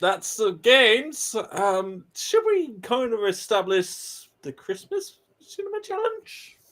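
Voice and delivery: very high-pitched talking voice. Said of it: "Is your voice gonna go any higher?".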